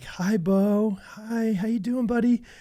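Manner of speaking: put-on calm, soft, unhurried and very drawn out. Retelling a mother greeting her son after surgery: imitating a calm mother. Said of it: "trying to be really calm".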